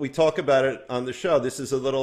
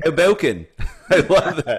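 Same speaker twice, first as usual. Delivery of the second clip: shoddy, fake British accent, loud and slow; 3 semitones higher, 6 dB louder than usual. Saying the other person's town name back to them, shitty British accent. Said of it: "That's my shitty British accent".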